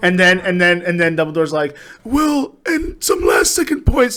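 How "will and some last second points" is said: very high, drawn-out, announcer-style delivery. Retelling a movie scene where points are awarded: Dumbledore impression. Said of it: "That was a good impression".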